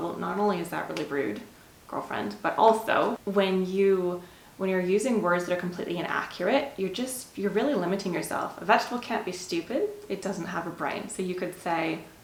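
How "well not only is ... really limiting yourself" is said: ordinary delivery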